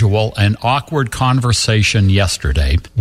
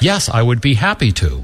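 mock robotic, mechanical, scripted-sounding voice. Speaker imitates how the agent on the phone answered, imitating a robotic scripted reply. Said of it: "And it sounded like this".

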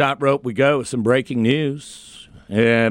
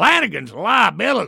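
rough, creaky put-on voice, higher pitch; 7 semitones higher than usual. Retelling what a co-host said yesterday: Johnny impression. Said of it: "That's my Johnny impression".

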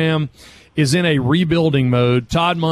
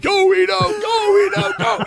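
mock, very high, long, stretched, cheering scream. Retelling a friend cheering for a player in a press box: imitating someone screaming. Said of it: "starts screaming".

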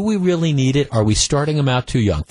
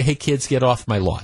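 ordinary talk, nothing marked

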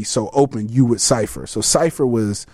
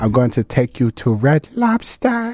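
teasing, put-on famous-musician voice. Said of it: "I just tortured her with impressions of [name]. Like".

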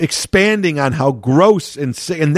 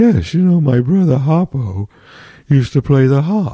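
mock elderly man voice; 2 semitones lower than usual. Describing how Groucho talked when he got older, do an elderly Groucho Marx impression. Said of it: "he would sort of talk like this".

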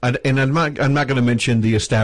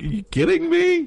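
very high incredulous disbelieving tone. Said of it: "I'm just like".

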